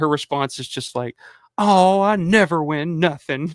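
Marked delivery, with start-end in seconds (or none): 1.6-3.5 put-on very slow, drawn-out voice of a very old lady. Retelling a game show call-in contestant who loses, imitating a really old lady. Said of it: "this really old lady".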